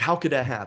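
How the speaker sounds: plain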